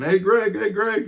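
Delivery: high, loud yell calling out far. Retelling calling out to Greg while getting closer to him: retelling a yell. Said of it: "I'm yelling".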